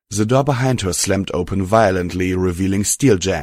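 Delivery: ordinary delivery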